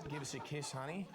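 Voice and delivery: put-on Aussie accent. Performing in a bit with others, in an Australian accent. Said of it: "the Australian accent".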